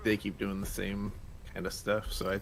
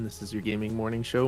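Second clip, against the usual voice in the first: ordinary delivery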